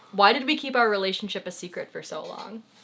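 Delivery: ordinary talk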